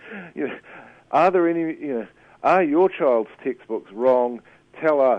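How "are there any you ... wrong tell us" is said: loud, mock pleading talk-show host voice. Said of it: "the host encourages parents to".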